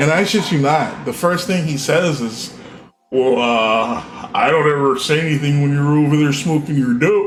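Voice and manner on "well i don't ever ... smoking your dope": grumbling, complaining, long stretched-out "uh". Doing an impression of his reply in the argument: impression of the guy complaining. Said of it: "I can do an impression of them".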